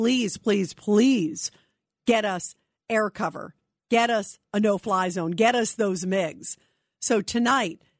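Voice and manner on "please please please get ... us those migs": ordinary talk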